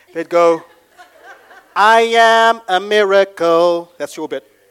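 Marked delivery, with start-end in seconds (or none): 1.8-3.9 very slow, tough-guy gangster delivery. Showing a participant how to say their bit, a bit of a gangster voice. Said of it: "say it with a bit of a gangster voice".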